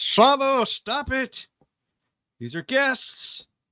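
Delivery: very high-pitched, loud yell. Voicing a character stopping an attack on guests: yelling NPC. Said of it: "yells out".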